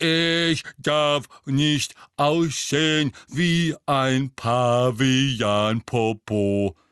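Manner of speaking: loud, effortful grunting voice. Reading a character mimicking another to make everyone laugh, grunting deep voice like Goyle. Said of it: "grunzte mit tiefer Stimme wie Goyle".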